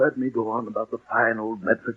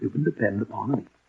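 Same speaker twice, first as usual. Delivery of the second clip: plain reading voice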